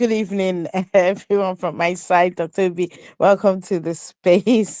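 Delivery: words broken up by laughter. Taking the floor after being invited to speak, laughing while talking. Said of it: "I can't stop laughing".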